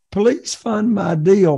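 high, slow, desperate pleading tone.

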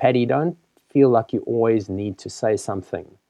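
very quiet, soft, low-key, understated. Retelling what was said walking away from a meeting: imitating someone speaking very quietly. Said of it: "he very quietly, in an understated way".

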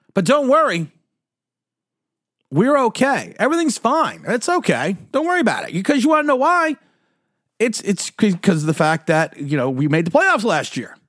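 fake-soothing, sing-song, dripping sarcasm. Complaining about bad tackling, then telling listeners not to worry: sarcastic. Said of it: "Warning, sarcasm".

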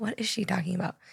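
soft, puzzled, muttered to oneself. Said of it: "And I was like".

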